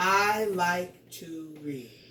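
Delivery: pitch falls at the end on "read". Teaching how punctuation guides reading, with the voice falling on read. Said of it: "my voice dropped because I see that period".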